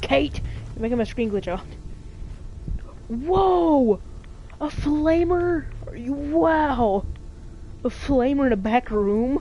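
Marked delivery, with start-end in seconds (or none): 3.1-9.4 very slow, sarcastically impressed, drawn-out "wow". Gaming with a teammate, reacting to an item find, sarcastic. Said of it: "I was being sarcastic".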